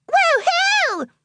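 excited cheering whoop, pitched way up high. Reading a character's reaction to news of a big party: cheering. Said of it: "Pinkie Pie cheered".

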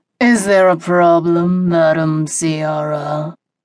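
snarling in a deep voice. A man suddenly addresses the woman with the group from behind, deep snarl. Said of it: "a man's deep voice snarled".

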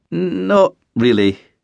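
uneasy, nervous tone, slightly high. A driver answers a policeman watching him inspect his vehicle: nervously. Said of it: "the driver said nervously".

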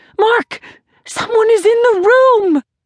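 screaming in a very high voice. Casey wakes in the night and calls to her husband Mark, screaming. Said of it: "She clutched the blankets to her chin and screamed".

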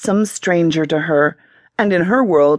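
ordinary delivery, nothing marked

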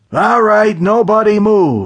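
loud, menacing, sinister, very high, shrill voice. Narrator reading a story, an unseen voice speaking out, in a loud sinister voice. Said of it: "A loud sinister voice echoed".

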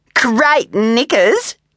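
laughing through the words at a very high pitch. Kylie taunts Izzy, pointing at her, laughing. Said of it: "Kylie laughed, pointing up at Izzy's flowered bum".

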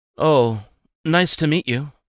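half-hearted, unenthusiastic, slightly high. Narrator reads the twins replying to a family introduction, half-hearted. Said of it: "though half-heartedly".

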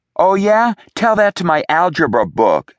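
very high, shrill, shouted delivery. Narrator reads a girl yelling back at an older boy: yelled back. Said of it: "Zoe yelled back".

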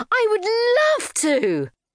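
very high, thrilled, drawn-out, swooping excited shriek. Narrator reads her answer to a holiday invitation, screaming with excitement. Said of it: "screamed Ugenia in excitement".

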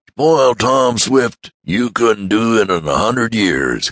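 eager, high, enthusiastic exclaiming cry. Mr. Damon answers Mr. Swift's warning about spoiling Tom, crying out enthusiastically. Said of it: "cried Mr. Damon enthusiastically".

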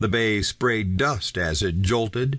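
plain

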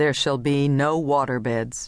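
ordinary delivery

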